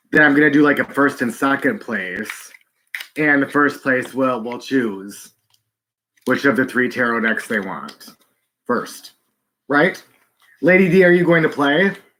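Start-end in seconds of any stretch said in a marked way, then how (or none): 10.6-11.9 high-pitched screaming, shouted out. Setting up a tarot deck giveaway, calling out to a participant: screaming. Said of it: "I don't know why I scream".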